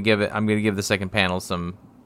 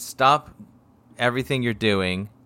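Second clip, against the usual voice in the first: ordinary talk, nothing marked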